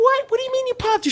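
acted, thrilled, very high, fast disbelieving shriek. Retelling his mom's reaction to his news, imitating her happy screaming. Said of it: "She was screaming, really happy".

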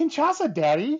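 high, loud, incredulous, as if it's obvious.

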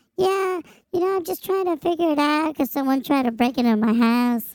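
shrill high-pitched woman's voice. Retelling a customer's words, imitating her very high-pitched voice. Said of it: "she had a very high-pitched voice".

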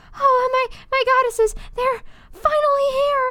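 very high, slow words broken by gasps. Reading a story, the narrator speaks as help finally arrives, gasping for breath. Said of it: "I said in between gasps of breath".

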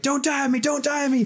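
frantic, desperate, very high scream. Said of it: "I was just screaming it".

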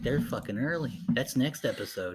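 plain

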